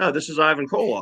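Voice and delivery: mock soft, gentle voice. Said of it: "gentle voice and everything else".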